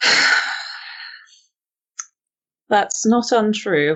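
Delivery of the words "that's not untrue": slow, tired, weary. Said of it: "I say, looking a bit tired".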